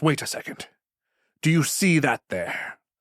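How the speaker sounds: put-on slight pirate accent. Voicing the captain who grabs a player's arm: a bit of a piratey accent. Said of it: "a bit of a piratey accent".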